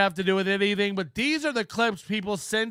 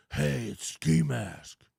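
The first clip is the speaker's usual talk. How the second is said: very low, gravelly put-on voice, slow and grinding; 9 semitones lower, 4 dB quieter than usual. Mocking an affected way of answering a phone call: Batman voice. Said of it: "doing the Batman voice".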